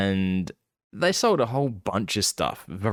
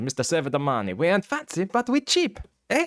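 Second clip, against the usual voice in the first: high, hammed-up put-on Italian accent; 8 semitones higher than usual. Speaker imitates a store mascot's slogan, Luigi mascot voice. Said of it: "puts on the, the voice".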